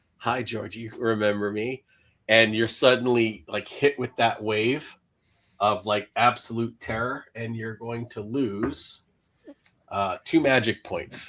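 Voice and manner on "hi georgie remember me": put-on child's speaking voice.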